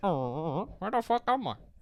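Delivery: small, slow, little alien creature voice. Acting out a small alien who crash-landed in a garden: put-on alien voice. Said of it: "He says it like that".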